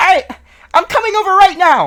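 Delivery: shrill, very high-pitched, loud voice. Retelling how he answered that he was coming over, imitating his high-pitched voice. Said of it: "He had a pretty high pitched voice".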